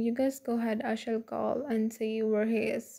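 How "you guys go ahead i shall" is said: plain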